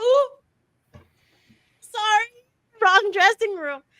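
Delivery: high, loud, chirping voice. Retelling how Allison scooted out of the room: imitating Allison. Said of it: "Allison was like".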